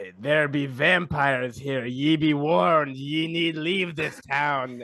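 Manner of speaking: put-on kids' TV puppet character voice. Recapping what the townsfolk said last episode, in a Sesame Street character voice. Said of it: "stone cold good Sesame Street character impression".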